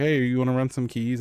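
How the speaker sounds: plain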